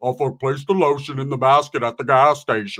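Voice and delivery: slipping into a film killer's voice. Retelling what a chasing old man kept shouting: Buffalo Bill voice. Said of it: "He got into his Buffalo Bill".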